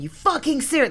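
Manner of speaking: put-on man's shout, very high pitched and outraged. Retelling sitting in a car after a water bottle leaked everywhere, retelling a shout like a man. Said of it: "Like shouting like a man".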